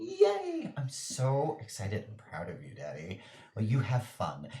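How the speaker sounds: swooping, sing-song daughter voice. Voicing the daughter asking her father about his plan: voicing the daughter character. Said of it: "And she's like".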